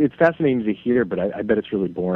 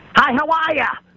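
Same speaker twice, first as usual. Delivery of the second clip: put-on Massachusetts accent, much higher; 5 dB louder than usual. Imitating someone from Danvers saying hello, strong Massachusetts accent. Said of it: "Unbelievable Massol accent".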